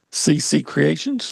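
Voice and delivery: pitch rises at the end of Creations. Naming a sponsor on air: said like a question. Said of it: "You said it like a question mark".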